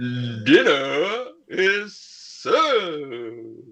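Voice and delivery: resounding, booming, drawn-out herald's call. Voicing someone at the far end of a banquet table, in a booming voice. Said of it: "booming voice going".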